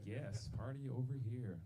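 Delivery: put-on drunken party-guy voice. Showing how drunk Party Cleveland sounds: Party Cleveland voice. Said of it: "Party Cleveland comes out".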